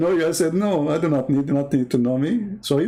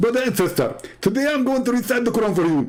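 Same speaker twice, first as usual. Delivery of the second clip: pitched-up delivery, sounding like teeth are missing; 5 semitones higher than usual. Claiming someone speaks like Zakir Naik, the speaker then does a Zakir Naik impression. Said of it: "he speak like a Zakir Naik".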